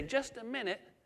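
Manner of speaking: put-on weak, feeble, frail, high old-lady voice. Retelling a taxi pickup, quoting the woman behind the door: imitating an elderly frail voice. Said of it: "this kind of elderly, frail voice say".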